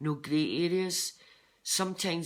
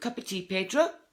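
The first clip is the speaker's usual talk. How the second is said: put-on Fife accent; 4 semitones higher, 3 dB louder than usual. Quoting what a guy used to say to you, in a put-on Fife accent. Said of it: "in the Fife accent".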